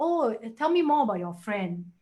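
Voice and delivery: ordinary talk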